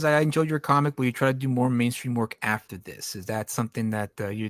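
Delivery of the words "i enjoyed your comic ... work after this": ordinary delivery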